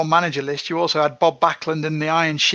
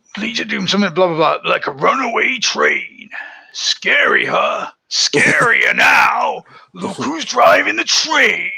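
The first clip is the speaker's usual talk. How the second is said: loud, belted-out wrestling promo delivery; 2 semitones higher, 5 dB louder than usual. Recall a promo line that always stands out to you, as a Hawk promo impression. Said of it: "That's quite a good impression".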